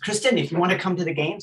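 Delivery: put-on strong, thick French accent. Retelling what a man said to her on the phone, in a strong French accent. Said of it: "he said in a very strong French accent".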